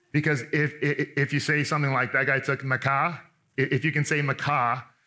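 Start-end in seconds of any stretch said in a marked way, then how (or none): 2.1-3.1 Boston-accented delivery. Teaching a bible verse, the speaker demonstrates a word for listeners in a boston accent. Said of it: "get in tune with your inner Boston accent".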